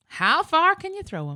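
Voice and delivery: loud, very high voice with slight country accent. Saying the episode title again when asked: little country accent. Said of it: "I love the little country accent".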